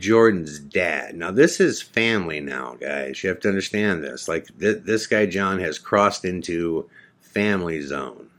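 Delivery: ordinary talk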